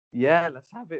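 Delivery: high-pitched voice breaking and cracking. Agreeing to start the second one, the speaker's voice cracks. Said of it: "Voice cracking and that".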